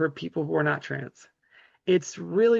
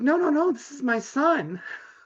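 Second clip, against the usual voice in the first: very high, drawn-out, horrified protesting voice; 9 semitones higher than usual. Retelling how a mother answered a stranger: imitating a horrified mother. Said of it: "and she's all horrified".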